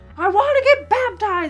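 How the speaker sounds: very high, very loud top-of-lungs scream. Speaker re-enacts what they screamed at their elders on the phone: retelling screaming at top of lungs. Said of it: "I screamed like".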